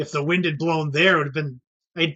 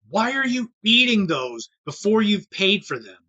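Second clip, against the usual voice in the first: mild, scolding yell, kept mild; 4 semitones higher than usual. Retelling an older female customer yelling at a man, imitating her yelling. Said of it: "But she's yelling at this guy".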